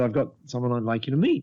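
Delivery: ordinary delivery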